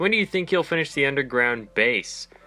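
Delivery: ordinary talk, nothing marked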